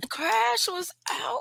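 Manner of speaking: very high, slow, drawn-out disbelieving tone.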